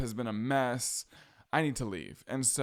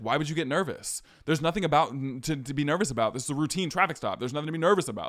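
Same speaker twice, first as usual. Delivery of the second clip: mock pushy, confrontational tone, fast and aggressive; 3 semitones higher, 4 dB louder than usual. Retelling a traffic stop, quoting the man who stopped them, imitating an aggressive tone. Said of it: "Like he was being so aggressive".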